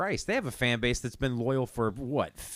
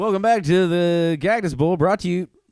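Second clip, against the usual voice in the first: put-on sports commentator voice; 6 semitones higher, 12 dB louder than usual. Joking about TV commentators cutting to commercial, do their line in a sports announcer voice. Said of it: "That's a really good announcer voice".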